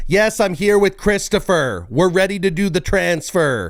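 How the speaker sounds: mock screaming, very high-pitched and shrill. Describing a man on the phone with a T-Mobile rep: retelling someone screaming. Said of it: "he's screaming into the phone".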